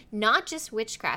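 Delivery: ordinary delivery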